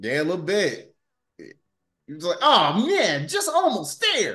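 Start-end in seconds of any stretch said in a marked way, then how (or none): 2.4-4.3 very high, swooping, animated cartoon voice. Quoting what he said, in a Sonic voice. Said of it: "I had to make a Sonic voice".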